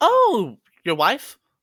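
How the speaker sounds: very loud, high-pitched snail character voice. Voicing a mail-carrying snail who answers a call: voicing snail mail character. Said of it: "You hear the sound as snail mail goes".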